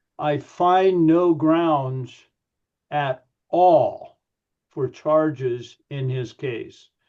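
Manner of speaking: heavy emphasis on "at all". Reading a line from John's gospel aloud, stress on at all. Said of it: "I uh, put emphasis on at all".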